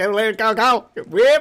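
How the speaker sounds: thin, high-pitched rural country voice. Imitating how the speaker's uncle sounds, high-pitched country voice. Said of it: "Just that high pitched country voice".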